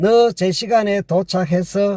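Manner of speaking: ordinary delivery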